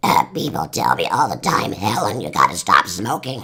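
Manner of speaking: low, really raspy, worn-out voice. Recalling an old commercial with a smoking woman, doing a raspy voice impression. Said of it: "that really raspy one".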